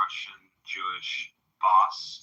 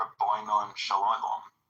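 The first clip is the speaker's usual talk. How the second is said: put-on English accent. Retelling how John says the greeting: imitating John's English accent. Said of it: "like the English accent way".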